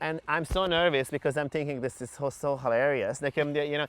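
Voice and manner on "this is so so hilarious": ordinary delivery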